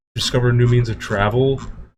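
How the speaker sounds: ordinary talk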